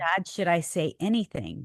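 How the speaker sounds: ordinary delivery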